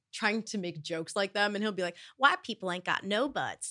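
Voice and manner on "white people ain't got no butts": swooping, animated stand-up comedian punchline delivery. Retelling a cartoon episode, doing an impression of Bobby Hill. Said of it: "Great impression".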